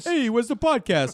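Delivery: put-on Bronx accent. Imitating a man who can't find the podcast on TV, mock Bronx accent. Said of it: "I'm Bronxy over here".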